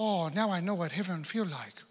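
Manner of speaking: put-on gentle Korean-accented speech. Retelling what a man said after finally reaching the airport bathroom, in his korean accent. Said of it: "in his Korean accent".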